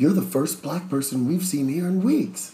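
thrilled, eager exclamation tone. Retelling what an older man at a bar said to him, retelling an excited remark.

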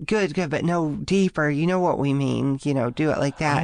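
ordinary talk, nothing marked

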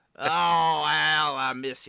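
announcer impersonation. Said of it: "My Herbstreit is just Collinsworth".

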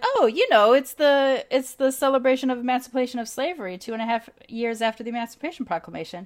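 feigned surprise. Retelling explaining Juneteenth to a coworker: imitating own put-on surprise. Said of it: "behaved as if I'm surprised you don't know".

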